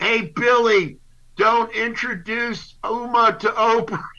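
very high-pitched, stretched, drawn-out holler. Speaker retells a line someone yelled at a host, retelling a yell. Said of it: "and he yelled".

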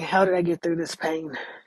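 ordinary talk, nothing marked

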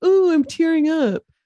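loud, dripping sarcasm with overdone put-on emotion. Retelling a bounty hunter's mocking line: imitating sarcastic remark.

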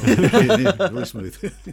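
high, loud laughing through the words.

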